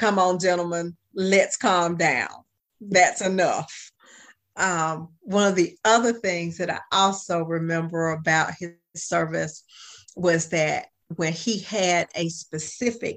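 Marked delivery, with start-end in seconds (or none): 0.0-3.9 put-on deep baritone voice. Retelling how he calmed two loudly arguing colleagues, in a baritone voice. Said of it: "brought out the baritone voice and said".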